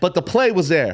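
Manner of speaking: usual speaking voice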